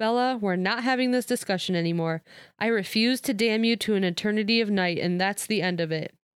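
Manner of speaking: plain reading voice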